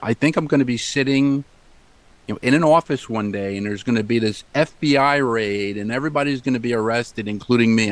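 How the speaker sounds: ordinary talk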